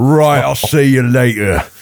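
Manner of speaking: put-on London Cockney accent, kept up. Joking about being stuck in Cockney all day: put-on Cockney accent. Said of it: "you're Cockney for the rest of the day".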